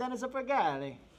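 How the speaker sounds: put-on Italian pronunciation of a name. Saying a viewer's name after suggesting it be said like an italian: italian accent. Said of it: "Say it like an Italian".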